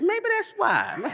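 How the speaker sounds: high-pitched. Speaker showing the audience how to say a phrase back: high-pitched. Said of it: "Y'all got to say it high-pitched".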